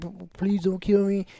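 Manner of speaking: stammer catching on the opening p, stumbling start. Retelling a scene where a frightened kid begs: imitating a stutter.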